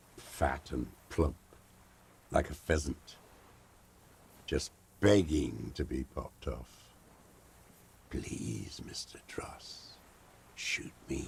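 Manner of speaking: whisper thick with predatory hunger. A character sizing up a target to shoot, predatory hungry whisper. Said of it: "He whispers with such predatory hunger".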